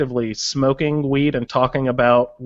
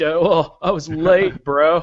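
put-on pitched-up California stoner accent; 5 semitones higher than usual. Imitate a guy on the show who sounds like a giant stoner, in a california stoner voice. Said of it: "the total, like, California, like ... that sort of voice".

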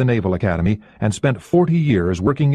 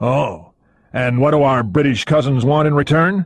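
openly suspicious, probing tone; 2 semitones higher than usual. A man answers his colleague's news, asking suspiciously. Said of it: "Greer asked suspiciously".

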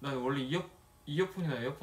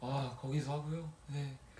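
utterly exhausted, weary, worn-out tone; 5 dB quieter than usual. Recounting an intercom call, imitating a very tired man. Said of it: "되게 지친 말투로".

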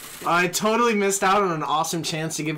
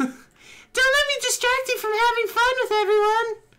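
put-on high, bad girly voice. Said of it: "go back to the shitty voice".

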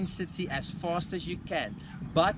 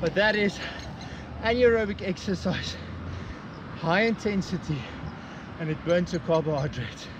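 breathless, winded, panting speech; 3 dB louder than usual. Speaking to viewers right after finishing an exercise set, out of breath. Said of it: "I'm very out of breath at the moment".

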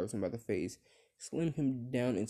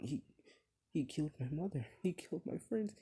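mock sobbing through the words, high and tearful; 6 semitones higher, 4 dB quieter than usual. Retelling a what-if where Kogan snaps back at Obito: imitating Kogan crying. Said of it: "he's crying like".

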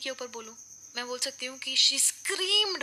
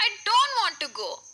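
high, weepy, tearful crying voice; 7 semitones higher, 4 dB louder than usual. Acting out what someone said to her while crying: imitating a tearful crying voice. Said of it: "कम से कम मैं उसकी आवाज़ थोड़ी बहुत imitate कर रही हूं ताकि आपको एक आइडिया आ जाए कि उसने ऐसे बोला था मुझे".

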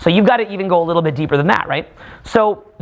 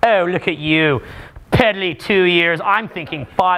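mock pompous, put-on voice. Mocking own planning ahead: mock pompous voice. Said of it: "I sound, like, all pompous right now".

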